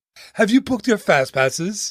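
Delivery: put-on fussy robot voice. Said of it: "that's an awful C three P O".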